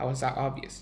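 ordinary delivery

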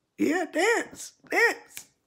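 put-on excited baby talk, high and bright.

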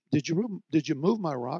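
gentle, really nice, sweet asking tone. Retelling asking the son-in-law about the rock: imitating saying it real nice. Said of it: "I said it real nice".

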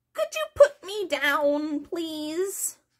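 high little rat voice, "down" drawn out. Reading a story, voice a rat speaking to the narrator in a talking rat voice.

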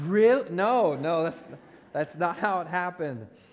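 loud, high incredulous outburst in disbelief. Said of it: "Some of you are like".

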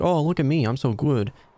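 boastful, showy put-on game-character voice. Retelling a game moment, imitating Kamek. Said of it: "Kamek is gonna be like".

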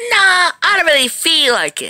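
very high, squeaky, swooping, wide-swinging sing-song cartoon voice. In a playful Sonic skit, the speaker answers the plea in a SpongeBob voice. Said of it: "How did your voice just change?".

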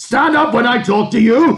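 very high, shrill scream. The hunchback hauls Friedrich up from the bench, screaming in his face. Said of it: "he screamed in his face".

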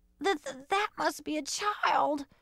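teeth-chattering weak voice. A cat, shivering in the falling snow, speaks to her companions: very weak shivering voice. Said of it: "shivered the Calico Cat in a very weak voice, her teeth chattering".

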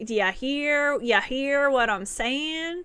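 put-on thick Texas accent, very drawn out and slow. Speaker retells a quote from Drennan, in a strong Texas accent. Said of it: "he said it in a really strong like Texas accent".

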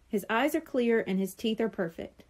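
ordinary delivery

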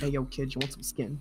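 low, hushed, sketchy back-alley dealer voice. Imagining meeting someone in an alley, the speaker plays a shady back-alley dealer. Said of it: "meeting up with someone in the alley and there's like".

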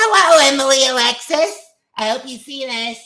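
put-on animatronic bear voice. Doing a fan's requested greeting, in Funtime Freddy voice. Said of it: "in your Funtime Freddy voice".

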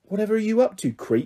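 high stage half-whisper, fully voiced. The narrator confronts Peter on the stairs in the night, half-whispered. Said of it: "I whispered".

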